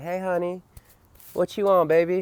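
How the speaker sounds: put-on high, kindly, coaxing older nurse voice. Retelling the nurse's question to him, imitating a nice older lady.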